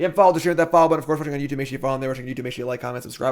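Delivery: rapid-fire, rattled-off, very fast delivery. Streamer rattling off the follow and subscribe reminder to viewers, speaking very fast. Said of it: "I speak so fast".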